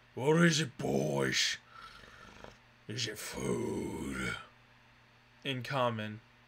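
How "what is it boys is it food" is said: slow, lumbering, swooping ogre character voice. Narrator voices an ogre speaking to its growling wolves, ogre voice. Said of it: "the ogre goes".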